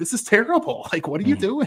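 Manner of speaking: very high-pitched yelling outburst. Retelling watching a game on tv: imitating own yelling at the tv. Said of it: "yelling at the T V".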